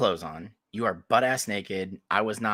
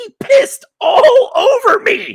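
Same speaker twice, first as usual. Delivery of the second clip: piercing, shrill, drawn-out, very loud high scream; 17 dB louder than usual. Retelling how she complained, the speaker imitates a woman's screaming. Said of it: "I just hear her screaming".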